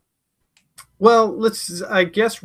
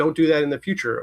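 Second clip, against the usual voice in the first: ordinary delivery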